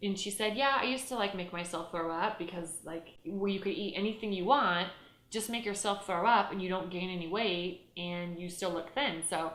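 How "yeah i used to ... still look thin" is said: usual speaking voice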